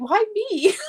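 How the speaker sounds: high, loud, irritated whining outburst.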